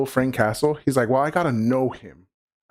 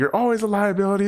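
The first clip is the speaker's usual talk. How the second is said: mock yelling, high-pitched, argumentative; 8 semitones higher than usual. Retelling a fight scene where characters yell at each other: imitating someone yelling. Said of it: "yelling at each other".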